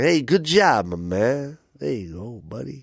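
put-on Italian mobster accent and voice. Retelling tipping a guy with a handshake, in an Italian mobster voice. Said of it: "that was my Italian".

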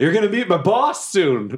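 high-pitched, threatening, shouted yell. Mid-fight, a player voicing their character calls out to the enemy: yelling. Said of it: "And I just yell".

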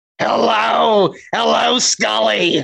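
raspy smoker's voice. Describing their mom's voice, doing a Roz from Monsters, Inc. voice. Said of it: "she sounded like, you remember fucking Roz from Monsters, Inc.?".

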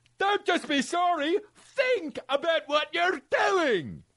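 put-on Scottish accent drifting in, very high pitch. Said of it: "so fucking Scottish".

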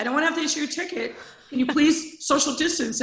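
high, fast, polite mock pleading. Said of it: "I'm like".

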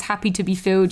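normal talking voice

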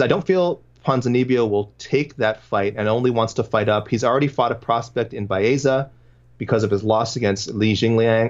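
plain

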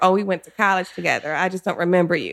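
ordinary talk, nothing marked

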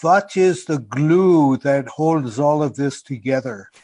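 attempted French accent, drawn out, drifting into German. Quoting a french friend's perennial question, attempted french accent. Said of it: "It sounds a little more German to me".

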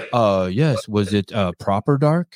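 put-on fancy accent. Recalling a past conversation, the speaker quotes Jorge, imitating Jorge's fancy accent. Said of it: "you have that fancy accent".

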